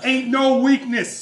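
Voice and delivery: loud, very high-pitched Boston accent. Asked what weakness the Patriots might have: Boston accent. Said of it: "There's that Boston accent".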